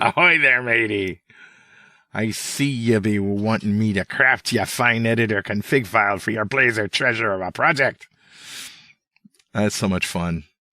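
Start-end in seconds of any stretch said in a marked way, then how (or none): 0.0-8.1 talking like a pirate. Reading out the reply to a prompt telling it to talk like a pirate, pirate voice. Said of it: "You talk like a pirate".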